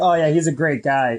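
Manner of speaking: ordinary talk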